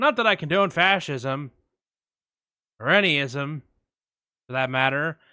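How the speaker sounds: put-on terribly flat delivery with no cadence. Retelling a classmate's terrible class speech: imitating a terrible flat speech. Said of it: "he said it like".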